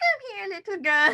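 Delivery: put-on very high sweet granny voice. Recapping a tv scene, sounding like a granny calling her grandchild. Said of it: "I'm trying to sound like a granny to her grandchild".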